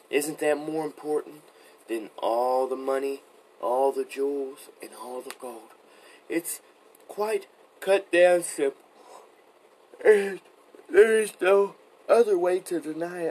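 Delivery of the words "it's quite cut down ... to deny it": loud, high-pitched talking through a yawn. Speaker who says he is very tired, talking while yawning. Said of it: "Excuse me for yawning".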